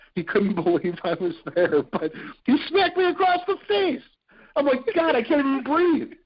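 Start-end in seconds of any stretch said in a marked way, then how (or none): 5.0-6.1 play-acted half out of breath, winded, pitched up. Retelling an interview after being smacked across the face, acting out being out of breath. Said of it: "I'm half out of breath".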